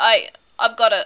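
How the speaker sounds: stuttering. In a narrated scene, one man speaks to another, stuttering. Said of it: "he stutters".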